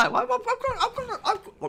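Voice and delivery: stuttering. Answering a viewer comment about winter, stuttering. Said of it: "it started slurring, stuttering and stirring".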